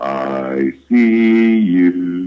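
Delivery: deep, really low voice, drawn-out "I", speaker-box sound. Retelling what a voice box said outside a building: imitating a really low voice. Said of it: "over the voice box came a really low voice".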